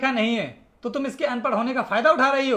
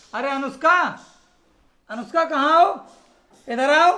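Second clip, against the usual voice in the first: loud, calling shout; 2 semitones higher, 4 dB louder than usual. Calling someone into the room from elsewhere in the house: shouting. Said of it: "क्यों इतने चिल्ला रहे हो?".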